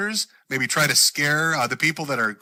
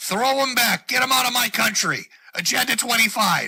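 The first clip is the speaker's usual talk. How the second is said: high-pitched scream, loud; 7 semitones higher than usual. Acting out what a man will yell while goose-stepping, give a mock scream. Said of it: "as he screams".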